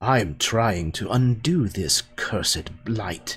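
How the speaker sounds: prickly, bristling with irritation. Voicing a character who is asked why he is here, answering bristling. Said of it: "He kind of bristles".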